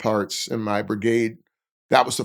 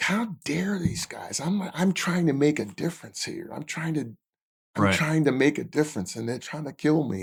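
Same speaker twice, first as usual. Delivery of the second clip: acted furious, indignant, outraged, angry rant; 4 semitones higher, 5 dB quieter than usual. Retelling own thoughts after being hit by an IED: retelling own angry outburst. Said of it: "I remember just being angry".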